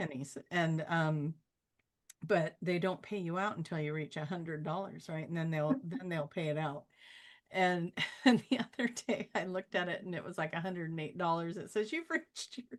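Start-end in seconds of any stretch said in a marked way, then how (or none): 8.2-12.8 words spoken through giggles and laughter. Speaker telling a story to a listener, laughing while talking. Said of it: "I'm laughing because it took me so long".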